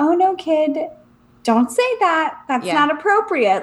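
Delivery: very motherly, princess-like voice. Retelling a joke about a crazy princess scolding a kid: motherly Sleeping Beauty voice. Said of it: "like a very motherly Sleeping Beauty princess".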